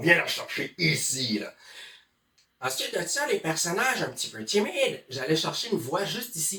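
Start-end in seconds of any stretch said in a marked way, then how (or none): 0.0-1.5 big, heavy, deep, low voice. Explaining voice tricks for burly, monstrous characters, demonstrating a big deep voice. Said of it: "je m'amusais à utiliser une grosse voix".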